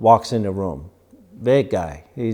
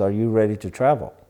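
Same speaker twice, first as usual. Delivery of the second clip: ordinary talk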